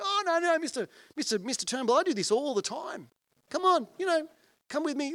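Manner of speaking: very high, loud, calm, unfazed, unbothered voice. Retelling the physio insisting to a patient: imitating an unperturbed young physio. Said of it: "this young guy unperturbed goes".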